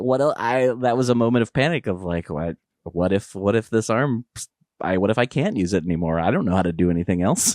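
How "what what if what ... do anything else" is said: plain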